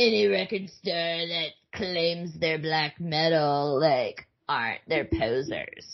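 mocking, derisive tone. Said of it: "he mocks their conversation".

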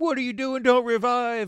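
very high-pitched, shrill, loud yelling. Retelling a random teammate during a firefight: imitating someone yelling. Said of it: "he was just yelling at me".

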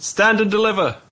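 very high, shrill, loud highwayman shout. Elsier jumps out of a bush at a robbery, shouting. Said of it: "jumps out of a bush and shouts".

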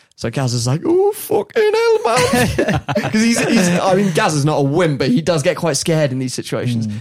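ordinary talk, nothing marked

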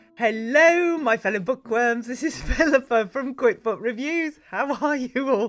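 loud, slow talking through giggles and laughter. Greeting the listeners at the start of the podcast, laughing while talking. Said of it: "I don't know why I'm laughing".

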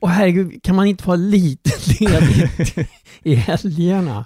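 slow, worried, drawn-out anxious outburst. Retelling own reaction to hearing about another episode: retelling own worried outburst. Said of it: "jag blev så här jätteorolig".

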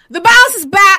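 shrill, full-blast, very loud, high-pitched shout. Announcing a catchphrase at the start of an episode: very loud. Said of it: "That was very loud".

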